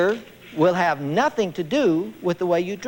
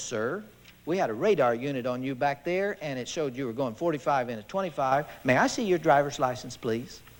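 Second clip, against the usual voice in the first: mock courteous, unruffled, calm and polite tone; 5 semitones lower, 7 dB quieter than usual. Retelling a traffic stop, quoting the officer: imitating a calm, polite officer. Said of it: "He says this so calmly".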